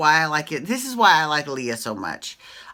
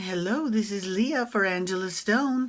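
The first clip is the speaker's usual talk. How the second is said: soft, fake, put-on English accent; 3 semitones higher, 5 dB quieter than usual. Discussing a show episode, doing a line in a put-on English accent. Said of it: "you've got to put on your English accent".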